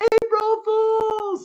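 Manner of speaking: mock, very high-pitched, triumphant yell. Retelling a dad's April Fools prank on an aunt: imitating dad yelling. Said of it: "my dad just yells".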